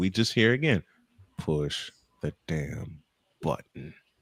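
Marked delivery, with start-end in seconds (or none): 1.4-3.9 acted whispered fury, hissed through clenched teeth. Retelling a man's repeated demand, imitating gritted-teeth anger. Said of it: "through gritted teeth and steam coming out".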